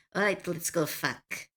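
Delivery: clumsy, bad fake French accent. Speaker imitates her flirting Lapine NPC from her game, bad French accent. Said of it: "she has a French accent and she goes".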